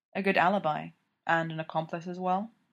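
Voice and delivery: plain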